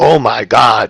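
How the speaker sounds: sudden, alarmed, panicked outburst.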